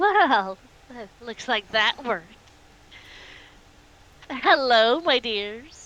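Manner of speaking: grinning sickeningly while speaking. An unnoticed woman stands up and greets the group, speaking with a sickening grin. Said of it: "She smiles a a sickening grin".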